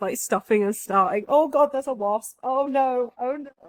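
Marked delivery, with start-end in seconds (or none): 1.3-3.5 high, frightened, startled exclamations. Reacting to a wasp that shows up while filming: scared. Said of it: "I'm so scared of wasps".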